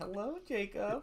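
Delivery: very high put-on girl voice. Retelling making a pair of pants talk: imitating a girl's voice. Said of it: "I wanna make it talk like a girl".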